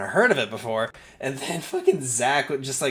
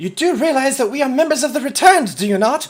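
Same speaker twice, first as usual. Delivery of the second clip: very loud, very high-pitched shouting; 12 semitones higher, 9 dB louder than usual. Shouting over the shoulder, rifle still pointed at rat people: shouting. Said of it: "I'm going to shout".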